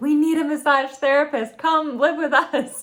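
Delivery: high-pitched, loud, eager pleading with a laugh. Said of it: "All the mothers were like".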